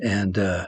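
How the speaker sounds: ordinary delivery, nothing marked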